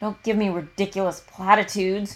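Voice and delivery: harsh, sharp, cutting tone. A man answers a woman's platitude, a harsh retort. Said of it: "Caleb retorts, harsher than intended".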